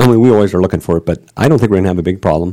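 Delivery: fast, rapid-fire delivery.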